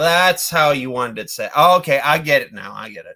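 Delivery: ordinary delivery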